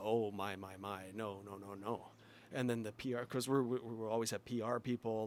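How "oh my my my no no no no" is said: put-on very drawn out, slow, soft Italian accent. Retelling how Luca reacted on walking into a place: imitating Luca's Italian accent. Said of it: "Luca with his Italian accent".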